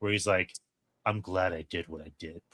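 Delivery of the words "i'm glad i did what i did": very quiet, deep, easygoing, calm relaxed voice. Retelling a film villain's line: imitating a deep relaxed tone. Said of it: "he just says it in this very, like, deep, relaxed tone".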